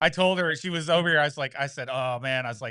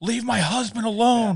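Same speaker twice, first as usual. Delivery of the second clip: mock high-pitched screaming voice; 9 semitones higher than usual. Retelling how a wife screamed at a caller: imitating wife screaming. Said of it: "my wife starts screaming at him".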